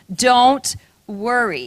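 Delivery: very slow, drawn-out, stretched, reassuring tone. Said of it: "Are you getting the message?".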